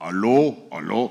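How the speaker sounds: put-on eleven-year-old boy's young, unbroken voice. Imitating a boy of eleven answering the phone: imitating an eleven-year-old boy's voice. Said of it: "oye a un niño a los once años".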